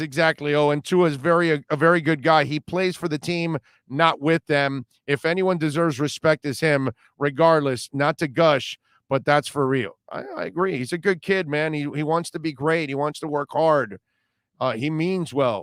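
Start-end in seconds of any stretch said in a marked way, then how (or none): none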